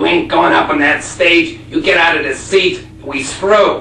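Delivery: loud, slow, barking jealous husband voice.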